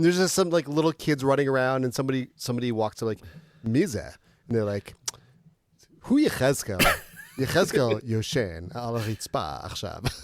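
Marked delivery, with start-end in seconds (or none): 6.0-10.1 put-on Israeli accent with drawn-out words. Speaker imagines someone in an Israeli community calling out a name: imitating an Israeli accent. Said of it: "You sounded like a Fabio kind of variation of Israeli".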